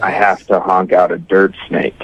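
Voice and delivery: imitated whisper. Retelling what a date leaned over and said: imitating a whisper. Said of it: "leaned over into my ear and whispered".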